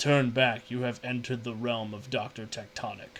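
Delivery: low, deep, rough, grinding rasp of a giant. Voicing Doctor Tectonic, the stone man, as he looks down at you: deep, grating voice. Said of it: "he says in this deep, grating voice".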